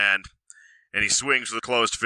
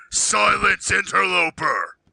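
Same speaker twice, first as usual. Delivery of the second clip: high, roaring, bellowing voice; 10 semitones higher, 3 dB louder than usual. A game character shouts at an interloper in Sylvan, bellowing. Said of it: "Bruce bellows out in Sylvan".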